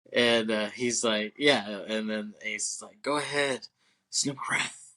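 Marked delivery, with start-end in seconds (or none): 3.1-4.7 breathy put-on voice, lots of air pushed through. Retelling a story, the speaker quotes Ace in Ace's breathy voice. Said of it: "like how he says that breathy voice that he does".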